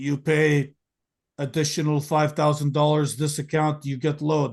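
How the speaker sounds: put-on Russian accent with broken English. Retelling what a guy told a customer asking about a load: put-on russian accent. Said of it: "some guy with a Russian accent would be like".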